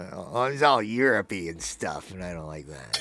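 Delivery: very low, no-fun killjoy grumbling voice. Speaker mocking people who still don't enjoy soccer, impression of a soccer hater. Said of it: "that's my impression of somebody".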